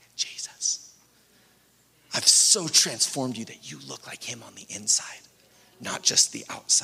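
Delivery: hushed, quiet whisper.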